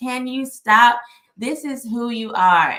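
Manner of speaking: play-acted, loud, words broken up by laughter. Retelling a cousin's phone call: imitating someone laughing while talking. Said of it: "she was just laughing".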